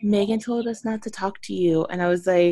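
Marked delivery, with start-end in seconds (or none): 0.0-1.9 quiet, soft, hushed half-whisper under the breath. Retelling what a mutual friend came over and said: imitating a half-whisper.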